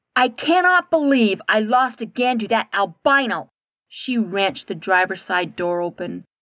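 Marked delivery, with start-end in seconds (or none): 0.2-3.5 seething, furious, very angry voice. Narrating a story, reading Katie's line as she storms back to her car, furious. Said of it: "She was so angry she could spit bullets".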